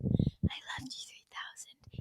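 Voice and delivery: soft, breathy whisper.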